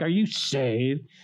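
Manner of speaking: ridiculing, teasing, mocking taunt. Speaker retells his older brother on the couch asking if he's saved, retelling mocking question. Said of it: "he did it mockingly".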